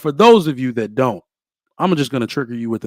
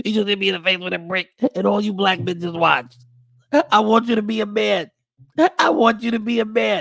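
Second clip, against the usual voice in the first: high, upset woman's voice; 9 semitones higher than usual. Speaker recounting the Brickgate scandal imitates the woman: impression of the Brickgate woman. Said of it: "Was that a good impression?".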